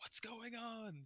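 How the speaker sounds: very high, frantic, panicked screaming. Voicing a man behind a door being banged on: screaming.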